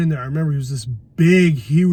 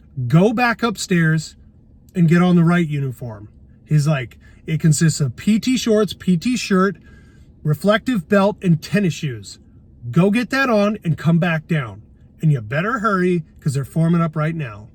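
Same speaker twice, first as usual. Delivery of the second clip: plain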